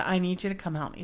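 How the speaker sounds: mock crying voice. Speaker retells calling her husband for help, retelling a tearful call. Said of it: "I was literally crying".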